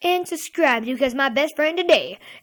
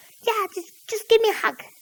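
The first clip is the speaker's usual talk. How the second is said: put-on high, annoying, pestering pleading tone; 8 semitones higher than usual. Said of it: "said in that same voice".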